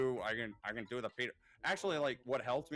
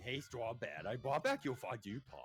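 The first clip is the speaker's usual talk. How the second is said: goofy cartoon character voice. Explaining how they repeat cartoon lines, quoting in a Homestar Runner voice. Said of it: "repeated lines from Homestar Runner".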